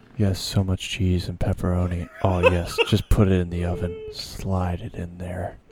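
very calm close-mic voice. Showing how to talk close to the mic, very calm voice. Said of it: "talk in a very calm voice".

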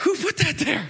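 play-acted seething, teeth clenched. Retelling a fall at church as pastor: imitating a furious, teeth-gritted question. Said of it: "through the gritting of my teeth".

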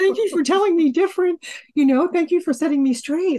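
high put-on voice. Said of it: "It's like".

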